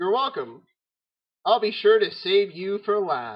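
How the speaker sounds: amused, teasing, mocking spirit voice. A game master voices a spirit formed from dust, answering a player's thanks; dust spirit voice. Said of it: "made manifest in the dust. He sort of forms himself into a solid, wispy type of thing, / A figure in the darkness sort of assumes the light. It is a swirling, spirit-like, spritey thing. Hold on, let".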